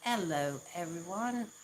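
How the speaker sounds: bad, failed, fake British accent. After saying they can't do it, attempting a greeting anyway in a bad British accent. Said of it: "I apologize to all British people".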